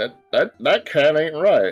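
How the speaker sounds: country farmhand, rustic farmer character voice. Speaking in character as Bob: Bob's rustic farmer voice. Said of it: "I'm doing a voice for no reason right now".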